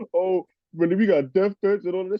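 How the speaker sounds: mock high, tearful, sobbing crying voice. Retelling what a friend said on a podcast: imitating someone crying. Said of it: "his fucking friend is on the podcast crying".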